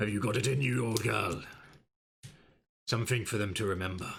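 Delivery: private aside to himself. Voicing Sir Istavold speaking to his horse: muttering under his breath. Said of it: "Sir Istavold under his breath in his helmet".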